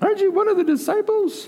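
put-on very high little girl voice. Retelling the crucifixion story, the speaker voices a little girl: little girl voice. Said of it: "That's my best girl voice".

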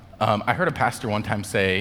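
ordinary delivery

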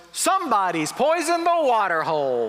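blurted, loud, high-pitched put-on announcer voice. Telling a pool story, the speaker quotes their son, retelling his loud outburst. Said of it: "in a loud voice goes".

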